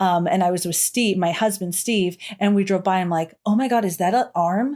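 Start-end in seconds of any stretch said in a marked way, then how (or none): none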